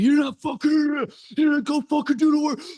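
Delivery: very high-pitched, berating, screaming rant. Retelling a mastermind leader berating everybody: imitating someone screaming. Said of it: "berating everybody and screaming at 'em".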